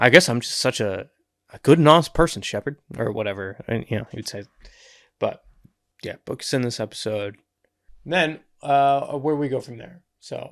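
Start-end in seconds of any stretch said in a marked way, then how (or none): 0.0-2.8 playful, whimsical, tongue-in-cheek, sarcastic mocking tone. Imitating how Mal might answer Book: imitating Mal, whimsical and sarcastic. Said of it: "a whimsical, sarcastic way".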